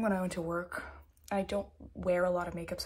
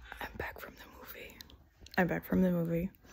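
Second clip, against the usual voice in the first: speaking quietly and softly. Talking after midnight while the family is downstairs: talking quietly. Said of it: "I'm talking quietly because my family is downstairs".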